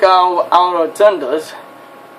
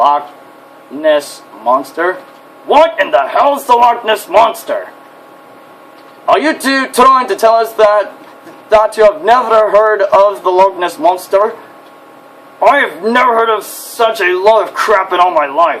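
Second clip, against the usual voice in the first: hot-tempered, incredulous, scornful angry outburst; 2 semitones higher than usual. In a machinima scene, a hot-tempered character answers two others, angry. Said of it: "I really need anger management. / I really need anger management".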